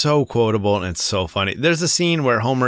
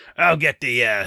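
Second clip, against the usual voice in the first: attempted put-on Scottish brogue. Quoting a cartoon groundskeeper: Groundskeeper Willie voice. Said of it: "Groundskeeper Willie being like".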